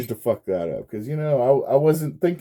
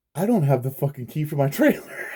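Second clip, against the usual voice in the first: mock pissed-off, angry cursing outburst; 3 semitones higher than usual. Retelling finding the trailer key missing: imitating own angry outburst. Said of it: "I was so pissed".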